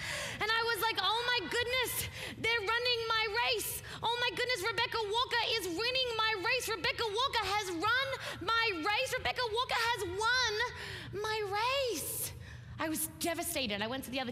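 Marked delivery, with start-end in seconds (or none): 1.0-12.3 put-on high, frantic childish yelling voice. Retelling watching a school race as a fourth grader, reenacting a childhood yell. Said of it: "I start yelling in my own fourth grade voice".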